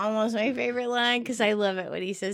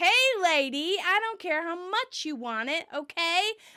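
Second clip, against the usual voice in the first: imitated loud yell, higher; 6 semitones higher than usual. Retelling a scene where the character shouts for everyone to hear: imitating a loud shout. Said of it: "Ross shouts loudly so that everyone can hear".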